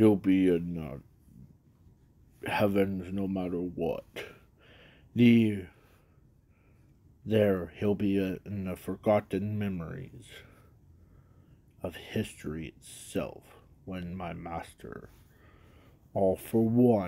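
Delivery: darkened, shadowy voice pitched low throughout. Telling a story and voicing what Zuko says: Zuko in a dark voice. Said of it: "let me do it in a dark voice".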